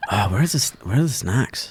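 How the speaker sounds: put-on voice with heavy mouth breathing. Doing an impression on a dare, imitating a person: Andrew Hamilton impression. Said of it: "do your best Andrew Hamilton impression".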